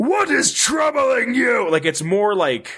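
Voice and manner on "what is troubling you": play-acted very high, projected, drawn-out mutant yell with pain. Show the other speaker how he delivers a line, imitating Wes Johnson yelling.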